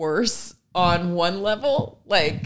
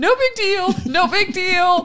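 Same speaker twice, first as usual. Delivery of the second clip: put-on tearful child voice, very high and slow; 12 semitones higher, 4 dB louder than usual. Retelling how a friend's small child reacts when hurt: imitating a child crying. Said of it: "start to cry".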